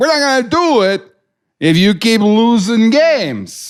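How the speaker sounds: awful put-on Chicago accent, pitched very high. Explaining a stadium dispute, speaking for the city of Chicago in a bad Chicago accent. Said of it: "That Chicago accent was awful".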